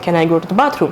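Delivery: ordinary delivery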